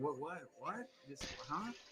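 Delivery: confused, baffled merchant voice. Voicing a merchant puzzled by what a customer said: confused merchant. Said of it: "kind of almost confused by what you said".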